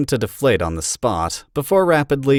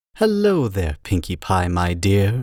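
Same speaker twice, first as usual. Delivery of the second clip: warm, silky smooth voice; 4 semitones lower than usual. Narrator reading the zebra greeting Pinkie Pie: Zecora's warm, smooth voice. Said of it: "in her warm, smooth voice".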